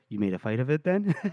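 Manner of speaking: put-on whisper. Retelling a scene from a story where a character whispers: retelling a character's whisper. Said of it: "and he whispers".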